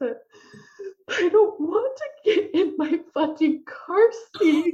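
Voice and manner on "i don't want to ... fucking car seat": put-on sobbing little child voice, high and slow. Retelling what a two-year-old said while refusing the car seat: imitating a sobbing child. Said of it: "he just started sobbing".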